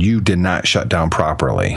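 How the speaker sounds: ordinary delivery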